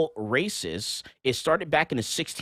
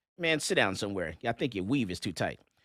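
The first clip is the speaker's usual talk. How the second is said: plain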